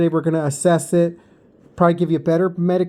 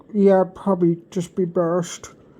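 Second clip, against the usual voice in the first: mimicked muffled swollen-cheek speech. Retelling telling the boss about leaving early, imitating swollen-cheek speech. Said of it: "I was literally talking like this the whole time".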